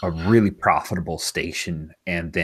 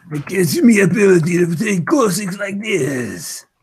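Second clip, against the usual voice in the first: very high, loud, shrill, squeaky, stretched-out alien voice; 14 semitones higher, 6 dB louder than usual. Player voicing their character Gorsix, a Toydarian, in Toydarian voice. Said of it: "That's my Toydarian voice".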